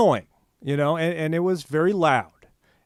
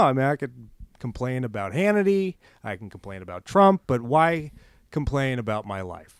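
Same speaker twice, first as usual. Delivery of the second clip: normal talking voice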